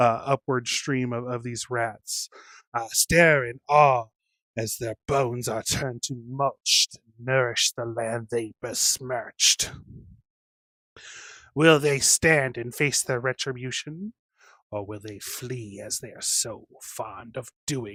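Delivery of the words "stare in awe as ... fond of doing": dissonant, clashing chorus of many voices. Narrating the rats streaming from the mill, voice this as a discordant chorus of voices. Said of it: "in a discordant chorus of voices".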